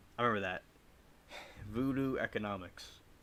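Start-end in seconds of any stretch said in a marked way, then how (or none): 1.7-3.0 flat monotone delivery, quieter. Imitating a biology teacher saying a phrase: teacher's monotone. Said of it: "he talked monotone like that".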